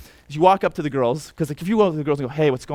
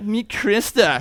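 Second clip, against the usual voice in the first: teasing, mocking tone with higher pitch; 6 semitones higher than usual. Retelling introducing a new friend to his friends: imitating a mocking tone. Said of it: "kind of mocking".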